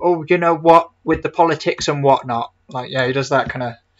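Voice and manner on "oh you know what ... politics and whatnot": put-on loud, high British accent. Imitating how another streamer fakes a British accent: Vosh doing a British accent. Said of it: "when Vosh, like, does a, a British accent".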